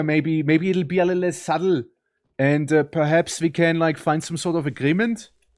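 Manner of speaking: over-the-top, exaggerated German accent. A speaker from Switzerland switches to talking in an exaggerated German accent. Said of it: "otherwise I can always speak like this here".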